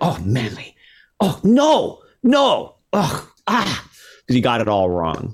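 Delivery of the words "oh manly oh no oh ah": put-on very high, slow, drawn-out, swooping German accent. Recalling a lecture, the speaker quotes a woman beside him in a German accent. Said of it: "she had a German accent".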